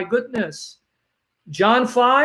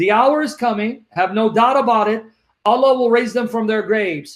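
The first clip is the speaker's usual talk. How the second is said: plain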